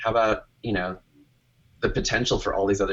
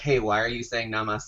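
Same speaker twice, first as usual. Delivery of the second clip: ordinary talk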